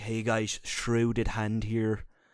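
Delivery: low fake Irish accent. Describing a YouTuber's delivery, doing Shrouded Hand's intro in a put-on Irish accent. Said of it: "I make him sound Irish".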